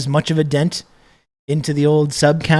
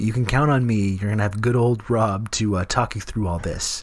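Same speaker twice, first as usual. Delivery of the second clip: put-on voice of someone holding in smoke; 6 semitones lower, 6 dB quieter than usual. Answering a request to do the voice: put-on bong voice. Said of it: "You do the bong voice".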